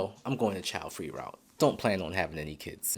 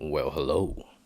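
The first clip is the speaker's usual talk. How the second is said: deep, low radio announcer baritone; 5 semitones lower than usual. Greeting viewers at the start of his video, deep radio voice. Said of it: "with my deep radio voice".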